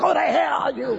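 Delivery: high-pitched mock yell.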